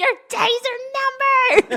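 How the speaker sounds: very high scream, are stretched out. Retelling a road-rage moment from a shared drive: imitating someone screaming. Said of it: "I remember you screaming".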